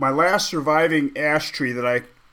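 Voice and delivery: ordinary talk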